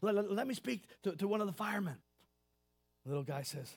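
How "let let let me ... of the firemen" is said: put-on panicky stammer, higher-pitched. Retelling a joke, a caller asking for a fireman: imitating a panicky stammer. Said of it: "the guy's getting a little panicky".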